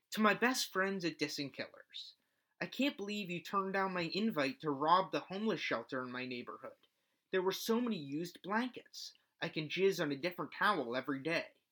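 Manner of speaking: ordinary talk, nothing marked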